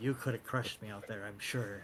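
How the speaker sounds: whispering in character. Speaking in character to another player after a contest: in-character whisper. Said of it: "kind of a whisper to, to you".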